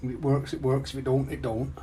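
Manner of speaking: put-on northern English accent. Trying out an accent before coming up to visit: put-on northern accent. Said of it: "My northern accent".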